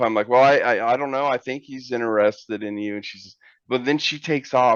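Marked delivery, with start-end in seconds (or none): none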